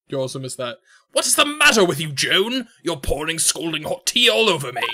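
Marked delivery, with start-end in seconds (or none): 1.1-4.8 unimpressive weak put-on British accent. Replaying a scene in a character voice: unimpressive British accent. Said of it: "unimpressive British accents".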